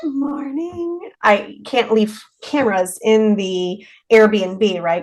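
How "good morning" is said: put-on very high, faint, hushed little-girl voice. Retelling a disembodied voice heard on camera: imitating a quiet little girl voice. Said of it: "really quiet, like, little girl voice".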